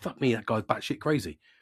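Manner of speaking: plain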